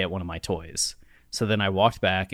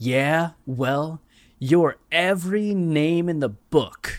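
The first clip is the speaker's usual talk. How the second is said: mock childish shouting, very slow, high and drawn-out; 9 semitones higher, 4 dB louder than usual. Retelling yelling back up at someone on a balcony: retelling own childhood yell. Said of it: "and I yelled back up at him".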